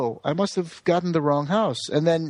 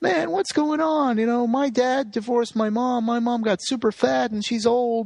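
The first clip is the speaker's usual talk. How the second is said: high, weepy, sobbing tearful voice; 7 semitones higher than usual. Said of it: "crying and is like".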